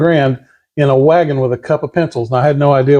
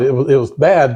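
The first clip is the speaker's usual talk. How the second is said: ordinary delivery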